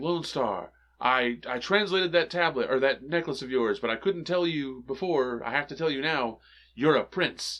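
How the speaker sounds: normal talking voice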